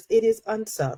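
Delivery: put-on Southern US belle accent. Speaker slips into an announced character voice: Blanche Devereaux voice. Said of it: "in my in my in my Blanche Devereaux voice".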